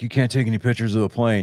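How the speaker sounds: high, yelling guard voice. Retelling what a security guard told them near the plane: imitating a guard yelling. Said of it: "he's sitting there fucking yelling at us".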